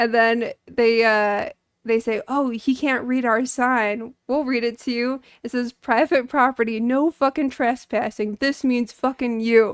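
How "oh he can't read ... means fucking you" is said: tough, hard-man thug voice. Retelling a scene where they tell a man he's on private property, in a retold badass voice. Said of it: "that's my badass voice".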